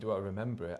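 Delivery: ordinary delivery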